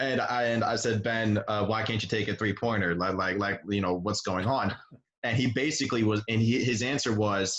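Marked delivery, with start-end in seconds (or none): none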